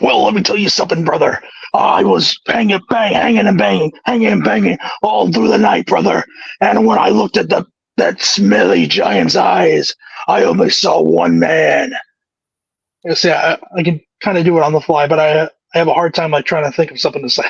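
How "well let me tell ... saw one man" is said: rough, gruff growl. Asked to impersonate a named wrestler, speaker does a Hulk Hogan impression. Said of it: "do your best impression of him".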